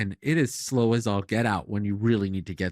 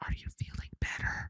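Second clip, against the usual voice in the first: hushed, soft whisper, barely audible. Retelling a Bible story, the Lord speaking to Elijah: imitating a whisper. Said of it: "the Lord goes in a whisper".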